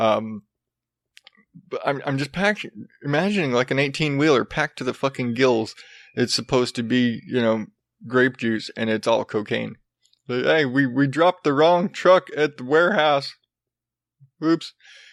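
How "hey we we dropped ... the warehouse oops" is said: dumb Southern drawl. Imagining a warehouse mix-up, in a dumb southern voice. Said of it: "every dumb mistake voice is some Southern".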